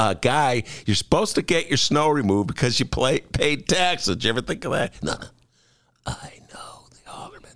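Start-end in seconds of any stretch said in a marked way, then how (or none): 5.0-7.5 put-on creepy, hushed whisper with voice dropped low. Imitating a former neighbor on the sidewalk: creepy imitation of a neighbor. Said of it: "The, the impression of that guy's creepy".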